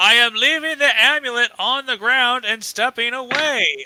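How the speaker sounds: very loud announcing call, carrying far. Calling out in character during a game scene: calling out very loudly. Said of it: "I will call out very loudly".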